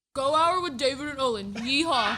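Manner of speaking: country accent, lightly laid on, put-on. Asked to introduce today's Texas Rewind segment, doing a Bronny impersonation. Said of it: "do your best Bronny impersonation".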